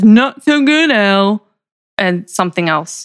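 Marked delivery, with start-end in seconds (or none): 0.0-1.4 mocking tone, pitched up. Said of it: "mockingly says".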